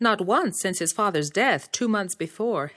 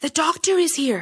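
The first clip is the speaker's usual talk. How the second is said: loud stage whisper, much higher pitched; 8 semitones higher, 4 dB louder than usual. Reading a story, a boy calling to his mother, in a loud whisper. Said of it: "he called in a loud whisper".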